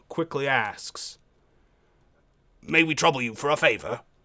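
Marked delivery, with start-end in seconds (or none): 2.6-4.0 quick, rough-edged, gruff voice. Game master voicing one of two strangers asking the players a favor: gruff voice. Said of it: "in a kind of gruff voice".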